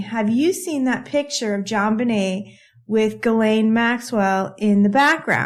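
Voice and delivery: ordinary talk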